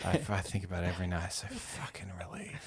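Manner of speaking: soft, creepy, menacing whisper. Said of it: "she creeps over and sits".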